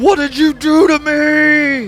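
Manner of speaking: very high, very slow snarl through clenched teeth. Voicing a character in the story's final scene, through gritted teeth. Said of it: "Through gritted teeth, he's going".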